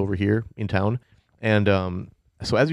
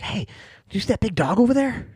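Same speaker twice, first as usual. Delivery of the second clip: put-on very high little child's voice; 13 semitones higher than usual. Voicing a kid whom a player's character hears: kid's voice. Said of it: "you hear this kid's voice".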